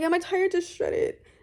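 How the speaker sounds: mock crying, high, tearful, hyperventilating panic. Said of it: "hyperventilating. I'm crying".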